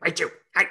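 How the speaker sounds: small, high, raspy little voice. Recalling Raichu from the anime: raspy Raichu voice. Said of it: "Raichu has this, like, little raspy voice".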